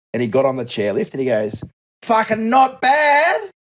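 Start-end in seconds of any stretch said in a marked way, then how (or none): 2.0-3.3 put-on shrill, shrieking Australian accent. Retelling an australian heard on a french chairlift, shrieking australian voice. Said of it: "it's a shriek".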